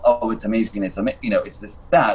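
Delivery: ordinary delivery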